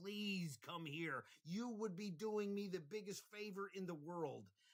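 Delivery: loud, high, imploring and begging plea. Retelling pleading out a window with a threatening man: imitating himself begging. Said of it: "and I begged him".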